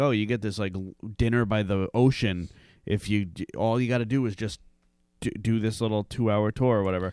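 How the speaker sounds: ordinary delivery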